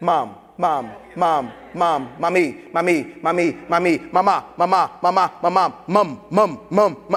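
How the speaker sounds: low, slow, drawn-out nonstop calling. Retelling a TV scene, a baby calling his mom nonstop: Baby Stewie calling his mom. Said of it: "he constantly is calling his mom".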